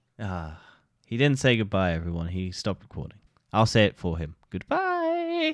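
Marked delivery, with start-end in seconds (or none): 4.5-5.6 very high, squeaky put-on voice. Saying goodbye for someone who stopped recording: Dan impression. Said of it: "That was a spot-on Dan impression".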